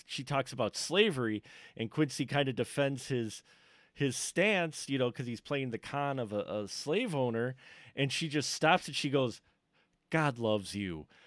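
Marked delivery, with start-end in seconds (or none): 10.1-11.0 mock-snide, put-on hostile tone, slower. Retelling how a woman ended an argument and walked away, mock-snide tone. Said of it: "in such a tone like, fuck you".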